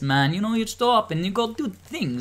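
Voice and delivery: put-on Jamaican accent. Retelling how a player voiced a statue guardian: imitating a Jamaican accent. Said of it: "she'd be talking to people like this".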